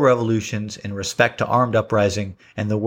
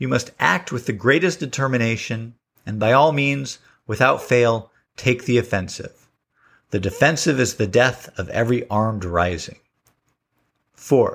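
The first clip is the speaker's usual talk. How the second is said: usual speaking voice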